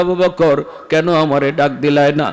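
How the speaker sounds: normal talking voice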